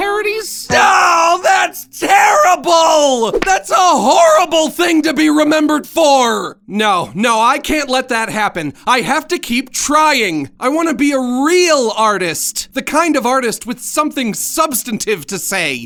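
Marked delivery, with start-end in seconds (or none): 0.0-6.6 high, horrified scream of dismay. An artist imagining what he'd be remembered for: screaming in dismay. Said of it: "(Max screaming)".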